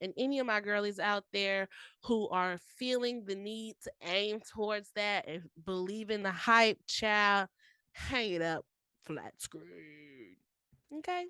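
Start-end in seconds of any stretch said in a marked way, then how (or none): 6.9-11.2 pitch swinging all over, badly controlled.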